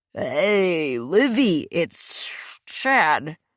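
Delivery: put-on very slow, drawn-out, slurred drunk voice. Reading a phone scene where Chad answers the call, in Chad's slurred drunk voice. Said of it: "A slurred voice answered".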